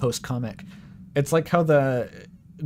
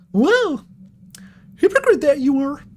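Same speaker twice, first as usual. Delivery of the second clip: botched squeaky cartoon voice, high, loud, bouncy; 14 semitones higher, 8 dB louder than usual. Trying out a voice for a line, the speaker attempts a failed Mickey Mouse impression. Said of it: "How do you fuck does Mickey Mouse talk?".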